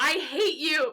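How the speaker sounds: high-pitched scream. Retelling a book scene where a character screams while held back: imitating someone screaming. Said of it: "fighting him and screaming".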